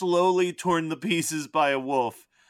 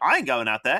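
put-on low-pitched Australian accent, voice dropped; 4 semitones lower than usual. Describing a favorite movie character, a hired guide to the woods; Jacko's Australian accent. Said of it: "your Australian accent is probably your best".

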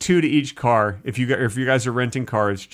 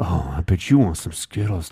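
suggestive, innuendo-laden, sexual tone; 6 semitones lower than usual. Showing how any phrase can be made sexual: suggestive, sexual tone. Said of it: "do that with any phrase and then make it sexual? Yeah, like, yeah, absolutely".

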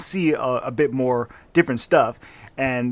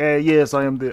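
haughty, vague, fake British accent. Imitating a doctor who came to America and lorded it over Americans: put-on British accent. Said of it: "I don't know what accent that was".

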